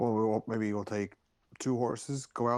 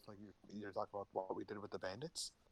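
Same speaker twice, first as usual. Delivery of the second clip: hushed, very soft, very quiet voice; 2 semitones lower, 14 dB quieter than usual. Player character speaking so the barkeep won't overhear, in a hushed tone. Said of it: "I'm kind of saying this in a hushed tone".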